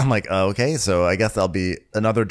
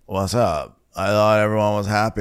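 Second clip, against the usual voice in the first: put-on drunken, slurred mumble; 2 semitones higher than usual. Retelling a scene where a drunk Craig asks Naomi a question: imitating Craig's drunken mumble. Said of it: "in super mumble mode".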